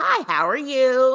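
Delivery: mock tone suddenly flipped completely to friendly. Retelling how a woman spoke to the dad on the phone, imitating a changed tone. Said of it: "Donna completely changes her tone".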